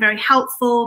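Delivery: normal talking voice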